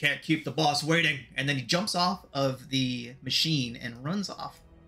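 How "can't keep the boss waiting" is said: put-on deep orc voice. Narrating a game scene, switching to a second character's deep orcish voice. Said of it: "it sounds like a deep, orcish voice".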